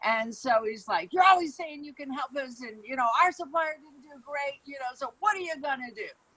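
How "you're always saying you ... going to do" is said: irate, furious, pitched-up angry voice. Retelling what an angry visitor said in the lobby: imitating a furious man. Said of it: "he's furious and all".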